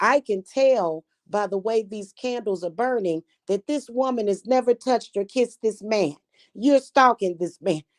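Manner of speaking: high-pitched, fussy, scolding tone, play-acted. Retelling a video of a spell-caster scolding a client who lied: imitating someone fussing. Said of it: "she was just fussing".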